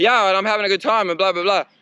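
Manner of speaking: big, loud, high, energetic riding voice. Showing how he talks to the camera while riding: big, energetic riding voice. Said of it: "I do this big riding voice. It's like".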